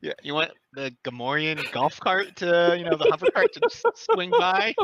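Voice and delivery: voice lifted slightly, animated, climbing and swooping. Narrating a scene, voicing Ness in a slightly raised voice. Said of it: "Ness's voice will raise slightly".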